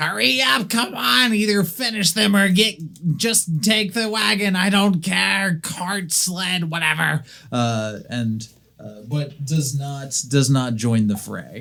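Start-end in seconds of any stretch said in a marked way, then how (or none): 0.0-7.2 very high, shrill, shouting goblin voice. A game master voices a goblin on a hilltop calling to the party: yelling goblin voice. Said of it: "starts yelling".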